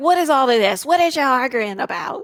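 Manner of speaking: loud, scolding voice.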